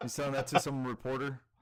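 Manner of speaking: normal talking voice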